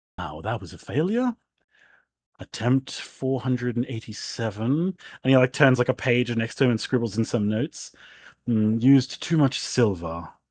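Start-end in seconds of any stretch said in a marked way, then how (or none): 0.2-4.6 low, grumbling mutter, spoken as an aside to oneself. Narrating a scene, the speaker voices a man at his notes, muttering to himself. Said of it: "you hear him like muttering like".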